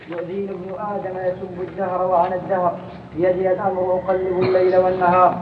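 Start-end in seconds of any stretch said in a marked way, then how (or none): none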